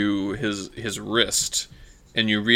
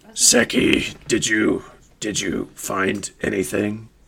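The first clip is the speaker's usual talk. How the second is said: put-on small, four-foot creature voice. Storyteller voicing a four-foot creature entering the compartment, small creature voice. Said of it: "the 4-foot creature ... And then it says".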